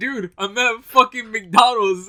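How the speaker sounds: very loud, fed-up, angry put-on shout. Retelling how a friend answered a call from mcdonald's, imitating an angry voice. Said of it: "You sounded so angry".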